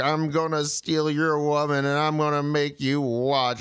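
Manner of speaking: usual speaking voice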